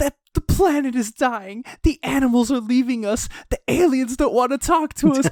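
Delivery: high, frantic, panicked freakout. Describing a Twitch video of a girl, imitating a panicked freakout. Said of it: "freaking out on Twitch".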